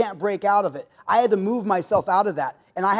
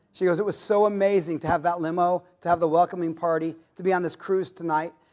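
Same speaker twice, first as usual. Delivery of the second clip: plain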